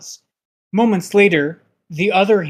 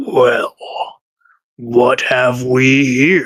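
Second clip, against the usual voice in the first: cavernous, very deep bass rumble; 3 semitones lower, 3 dB louder than usual. A game master voices an immense presence in the dark, deepest rumbling voice. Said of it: "The deepest voice you've ever heard says".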